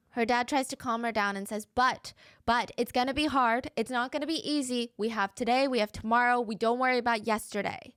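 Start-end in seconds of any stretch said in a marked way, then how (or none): none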